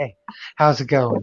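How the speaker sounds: low, flat, dead-level monotone drone. Imitating a friend who is said to be monotone: imitating a monotone voice. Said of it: "He's a monotone motherfucker. He's like".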